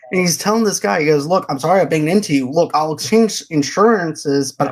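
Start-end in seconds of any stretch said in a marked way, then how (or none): none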